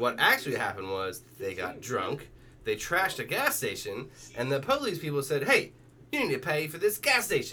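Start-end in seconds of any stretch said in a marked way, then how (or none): 5.4-7.5 put-on Australian-ish accent, pitched high. Retelling what the police people said to the drunk kids, in an Australian-y accent. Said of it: "That's an Australian-y accent".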